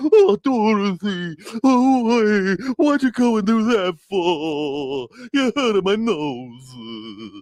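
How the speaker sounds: mock blubbering, very high, loud sob-whine. Retelling how Dorothy boops him on the nose, imitating him crying. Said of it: "he turns into a crying bitch".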